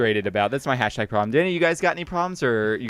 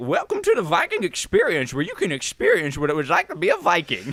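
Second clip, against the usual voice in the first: swooping, put-on prospector voice; 5 semitones higher than usual. Imagining a Viking-themed attraction greeting visitors: put-on Viking voice like a prospector. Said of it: "your Viking also sounds like the prospector voice".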